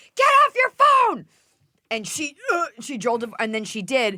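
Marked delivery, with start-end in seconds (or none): 0.1-1.2 very high, shrill, loud shrieked yell. Retelling yelling at a driver on her phone: retelling a yell. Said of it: "and I yelled at her".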